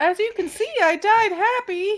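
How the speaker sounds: very high, loud and slow. Puppeteering a dead body so it speaks: Mickey Mouse voice. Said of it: "making him sound like Mickey Mouse".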